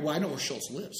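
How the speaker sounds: usual speaking voice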